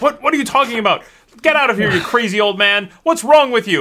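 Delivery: heated shouting. Voicing the other man in a shouting match: shouting in a heated argument. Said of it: "he starts to get in this shouting match".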